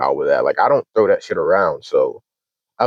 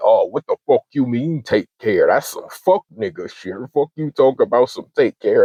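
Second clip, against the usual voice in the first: put-on furious, cursing, going-off angry rant; 4 semitones higher than usual. Retelling how another person went off on the speaker: imitating someone going off angrily. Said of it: "He just went off on me".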